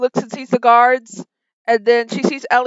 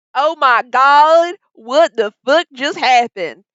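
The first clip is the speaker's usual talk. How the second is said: put-on voiced as an elderly woman. Voicing an old lady brought back from the dead: voicing an old lady. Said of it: "She goes".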